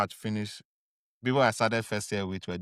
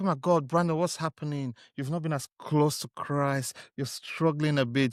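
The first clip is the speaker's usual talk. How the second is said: play-acted sorrowful, worried, caring tone; 5 semitones higher than usual. Acting out how the other should react to a struggling friend: mock sad concern. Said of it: "Should you not be sad when you're like".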